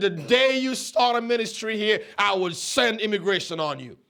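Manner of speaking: ordinary talk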